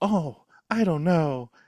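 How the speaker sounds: slow, drawn-out, cartoonish caricature voice. Describing the movie's heroine as a caricature: Christine Brown impression. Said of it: "she's just so".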